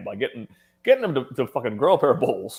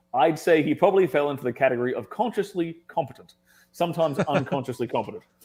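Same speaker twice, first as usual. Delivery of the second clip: ordinary talk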